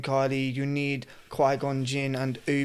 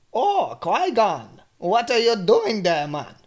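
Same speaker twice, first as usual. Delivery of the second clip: loud put-on Jamaican accent with swooping pitch; 8 semitones higher, 7 dB louder than usual. Rewatching a film, the speaker quotes a character in a jamaican accent. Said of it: "He's like legit has a Jamaican accent".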